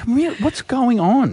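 baffled, panicked voice.

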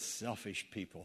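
muttered under breath. Speaker confessing to listeners what he said walking past people, muttered under breath. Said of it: "Under my breath, but loud enough for them to hear it".

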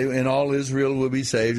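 normal talking voice

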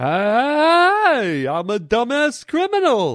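hey drawn out with swinging pitch. Acting out a bear talking to a partner: Yogi Bear voice. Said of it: "Yes, you are, Yogi".

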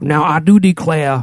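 put-on Southern accent, drawled slow. Imitating a state governor's evacuation speech: imitating the governor's heavy accent. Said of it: "he had an accent".

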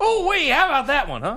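very high, energetic Southern voice. Picturing how Houston Nutt would react: Houston Nutt impression. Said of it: "Houston Nutt's got that great Southern accent with a lot of energy".

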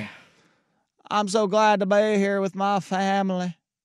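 slightly high, fake Southern accent. Joking about a coach saying family: fake Southern accent like Brian Kelly. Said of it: "did he say family with a fake Southern accent like Brian Kelly".

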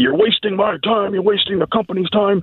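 mock high, furious scream at the top of the lungs. Retelling how the controller screamed at him in a meeting: imitating someone screaming. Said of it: "yelling at the top of his lungs, screaming at me".

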